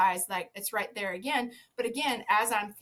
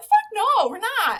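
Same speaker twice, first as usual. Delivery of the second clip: high, very loud, shrill full-volume yell; 12 semitones higher, 10 dB louder than usual. Retelling how they yelled back at the vet, imitating a yell. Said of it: "we just yelled back at her".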